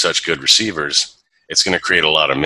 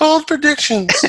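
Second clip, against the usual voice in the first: voice pushed way up, very high-pitched. Trying the co-host's bold predictions announcement themselves, in a high voice. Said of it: "I'll try it high voice".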